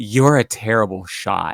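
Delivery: feminine car voice with sass. Voicing a possessed car as it leaves a player's head: feminine voice. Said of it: "this feminine voice".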